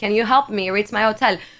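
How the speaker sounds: put-on desperate begging in a girl voice. Speaker describes a crying girl asking a police officer for help, imitating a girl begging. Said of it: "she's like begging you".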